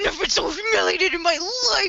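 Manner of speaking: very high, acted freak-out scream. Retelling an anime scene where Light starts screaming: imitating screaming. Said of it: "he just starts screaming".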